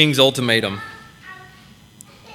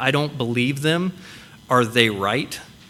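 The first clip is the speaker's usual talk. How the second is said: ordinary delivery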